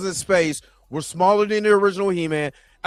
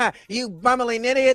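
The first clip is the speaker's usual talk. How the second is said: cartoon villain voice; 4 semitones higher than usual. Imitating someone trying the cartoon voice: Skeletor voice. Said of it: "if Skeletor sounds like that".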